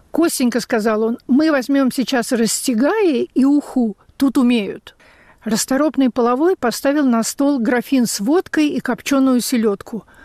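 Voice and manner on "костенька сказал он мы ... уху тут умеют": normal talking voice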